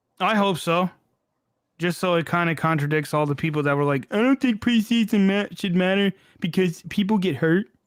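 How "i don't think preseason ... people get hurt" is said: scornful, derisive caricature, pitched up. Speaker makes fun of other people's opinion: mocking imitation. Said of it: "I do that when I make fun of people".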